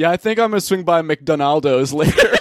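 casual, teasing, friendly voice. Teasing a friend about his abbreviations: imitating the other speaker. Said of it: "This is you going to McDonald's".

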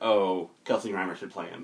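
plain

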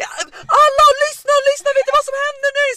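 very high, loud scream, full of excitement.

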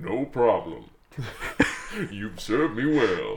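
low, deep, divine-sounding voice. Retelling a film scene where a nun hears a voice answer: voice of God. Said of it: "we hear this voice".

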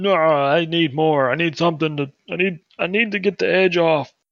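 put-on drunken slurring. Retelling a man's reply after being told he'd had enough, imitating a drunken slur. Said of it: "And in like a drunken slur".

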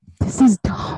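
ASMR-style whispering. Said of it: "we're doing A S M R for five minutes".

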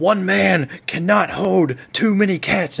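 very high, shrill yelled outburst. Telling a story, a man who drops a cat yells at a lady, retelling a yell. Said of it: "He drops a cat and he yells at her".

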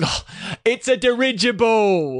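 very high, loud, bursting exclamation. Describing a favourite movie scene, the speaker retells a character's exclamation. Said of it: "and he's like".

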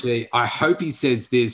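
ordinary talk

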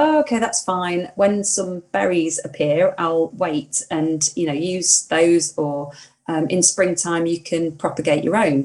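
normal talking voice

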